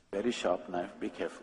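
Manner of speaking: very hushed, very quiet, secretive whispered aside. Retelling a warning about a sharp knife: imitating a whisper. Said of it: "she whispers so that I don't hear".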